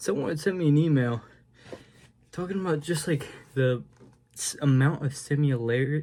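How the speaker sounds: slightly winded, half out of breath, catching breath. A vlogger talks to viewers at the end of a late vlog; half out of breath. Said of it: "I'm like half out of breath".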